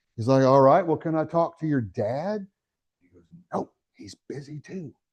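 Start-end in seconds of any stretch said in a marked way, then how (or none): 3.5-4.9 put-on very quiet, slow, whispered little-boy voice. Retelling a phone call answered by a little boy, imitating a child whispering. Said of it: "and he's whispering".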